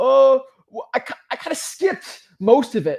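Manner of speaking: high, loud, caught-out student voice. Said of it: "He's like".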